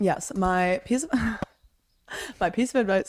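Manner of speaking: giggly, laughing through the words, barely holding together. Asked by a sister for one more piece of advice; laughing while talking. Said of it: "I like can't stop laughing every time".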